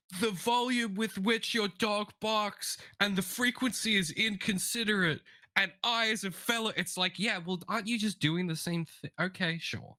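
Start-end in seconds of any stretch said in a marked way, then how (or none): 0.2-6.7 high-pitched yelling. Retelling what a neighbor yelled at a dog owner late at night: imitating a neighbor yelling. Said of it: "he's yelling".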